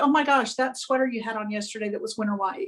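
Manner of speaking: very nonchalant, breezy and quick.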